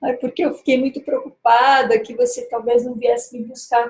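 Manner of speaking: mock whiny, tearful crying voice. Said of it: "ela entrou bem manhosa no carro".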